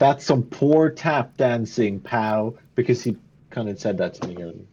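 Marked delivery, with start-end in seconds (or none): 0.0-2.6 slow, sarcastic, mocking taunting tone. Taunting an enemy who failed a jump: mocking taunt. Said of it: "do a quick whip back at him and say".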